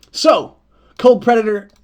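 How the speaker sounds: very loud, high, booming yell. Starting a dice game with the folks: yelling. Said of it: "sorry, I was yelling".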